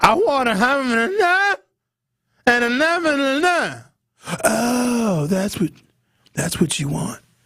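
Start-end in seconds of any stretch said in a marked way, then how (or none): 0.0-3.7 very high voice at top of range. Speaker retelling their own reply to a request, high upper-range voice. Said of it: "I get in the upper range of my".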